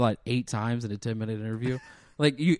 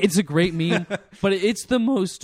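voice breaking mid-line, pitched up; 7 semitones higher, 4 dB louder than usual. Talking about a meme with another speaker, voice cracking. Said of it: "My voice cracked".

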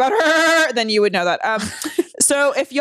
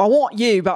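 fake Australian accent, botched and gone wrong. Acting out what he would say to someone, in a failed Australian accent. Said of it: "that's not the accent".

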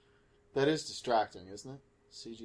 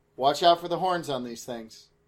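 ordinary talk, nothing marked

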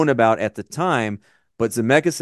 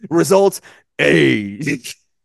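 put-on announcer voice; 4 semitones higher, 4 dB louder than usual. Discussing a film with co-hosts, a speaker mimics an on-screen verdict in announcer voice. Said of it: "Like in the announcer voice in there".

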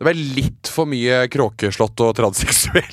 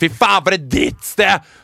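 put-on acted drunken outburst, high disgusted screaming yell; 5 semitones higher, 3 dB louder than usual. Retelling being refused more drinks at the venue, retelling a scream in someone's face. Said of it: "jeg skreik inn i trynet til [name]".

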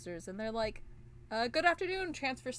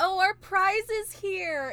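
high, loud, drawn-out, blaring annoying voice; 9 semitones higher, 8 dB louder than usual. Recapping a scene, doing the annoying Sancho sisters voice. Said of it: "And they're really annoying voices".

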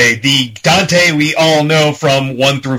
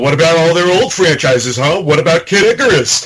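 grumbling, complaining, griping tone. Retelling a friend's complaint about old Nintendo franchises: imitating Pat complaining. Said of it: "complaining about the Nintendo one".

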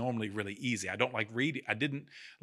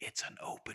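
put-on tiny playful whisper, quieter. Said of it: "heard this little bitty whisper".

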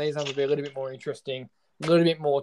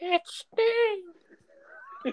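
pitch raised way up with a swooping glide; 4 dB quieter than usual. Announcing a wrestler's name the way Tony Schiavone would: imitating Tony Schiavone saying Sting. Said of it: "Cue Tony Schiavone saying Sting".

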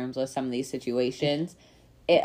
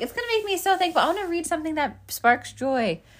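high, fast, mock cheerful reading voice. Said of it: "You're like".

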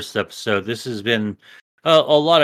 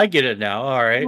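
normal talking voice

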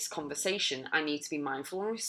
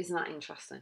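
calm, flat, even monotone, quieter; 6 dB quieter than usual. Showing how to react instead of screaming and shouting, calm monotone. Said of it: "You remain kind of monotone in your voice".

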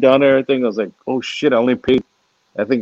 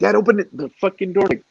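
mock raised, pitched-up holler; 8 semitones higher than usual. Speaker acting out how they yell at their dad: retelling a yell. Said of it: "I'll yell".

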